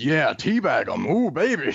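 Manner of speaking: mock high hyped-up yelling like a hype man.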